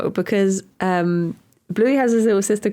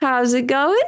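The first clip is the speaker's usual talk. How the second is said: mock Australian accent, higher pitch; 4 semitones higher than usual. Joking about kids picking up accents from australian shows: put-on australian accent. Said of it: "Don't tell Australian".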